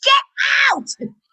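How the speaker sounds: abrupt, sudden, shrill high-pitched shout. Retelling yelling at Max in the car to get out: demonstrating a sudden yell. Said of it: "and I'll go".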